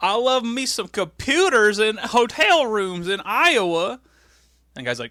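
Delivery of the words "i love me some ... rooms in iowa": put-on, very slow, drawn-out southern country bumpkin accent. Retell how a man started talking to the guy with the room key, in a country bumpkin southern accent. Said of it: "talking to him like in a southern accent, like a country bumpkin voice".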